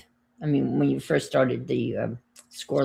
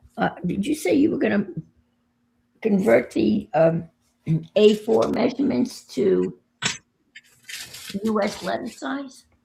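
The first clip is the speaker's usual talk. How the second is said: very high, hoarse, croaky, slow voice; 9 semitones higher, 4 dB louder than usual. Asking another speaker about converting measurements, croaky voice. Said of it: "It's croaky".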